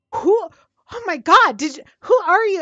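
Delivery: panicked, high, loud scream in alarm. Voicing a high elf who finds a body at a stranger's feet: screaming in alarm. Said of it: "and just screams".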